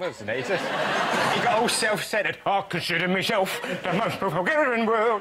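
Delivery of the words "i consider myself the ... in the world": higher, put-on Cockney character voice. Riffing on a lyric from Oliver the musical: Artful Dodger voice. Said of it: "It sounds like the Artful Dodger".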